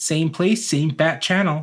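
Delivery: put-on American accent. Trying out a catchphrase in accents with a co-host: american accent. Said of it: "I feel like it has to be an American accent".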